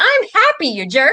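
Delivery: high, loud, laughing mock retort.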